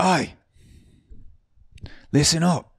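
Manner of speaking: bad put-on Australian accent, very high-pitched. Retelling how a bartender called out to the crowd, in a bad Australian accent. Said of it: "bear with my Australian accent".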